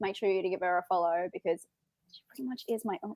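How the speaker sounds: hushed, very quiet half-whisper into the mic. A host plugging a guest's channel to viewers, half-whispering into the mic. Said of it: "I'm whispering into this is the mic".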